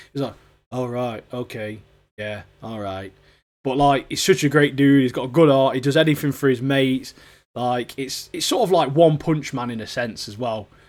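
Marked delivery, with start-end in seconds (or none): 0.7-3.1 flat, quiet, low monotone mumble. Describing a favorite show character; monotone Mash impression. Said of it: "he's very monotone. His voice is".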